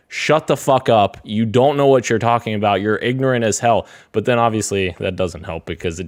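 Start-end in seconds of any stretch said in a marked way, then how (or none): 0.1-3.8 furious, angry screaming tirade. Retelling yelling at other players over a headset: imitating own screaming. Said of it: "just start screaming at them saying".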